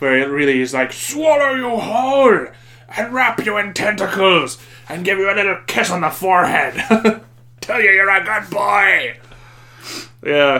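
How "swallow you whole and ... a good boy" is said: grand, thundering, booming voice, pitched up. Describing a film to friends, speaker acts out how some menacing creature might speak. imitating a big booming voice. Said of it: "in that big booming voice".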